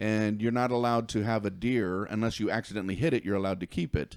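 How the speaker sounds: ordinary delivery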